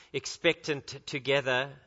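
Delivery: ordinary delivery, nothing marked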